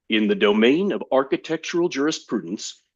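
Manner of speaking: put-on best-possible broadcast announcer voice. Demonstrating a complicated statement in the best possible announcer voice. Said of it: "in the best possible announcer voice".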